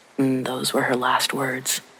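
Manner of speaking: plain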